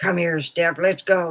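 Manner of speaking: put-on fond, loving tone in a New York accent. Recounting how your grandma talked to you; imitating a new york accent. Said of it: "She almost sounded like she came from New York".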